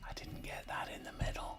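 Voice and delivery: soft, quick whisper. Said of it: "but I'm whispering".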